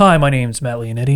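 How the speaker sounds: weird, stiff, buttoned-up put-on professional voice. Retelling how he introduced himself while door knocking, in a weird buttoned-up voice. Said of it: "I'd put on this like weird voice".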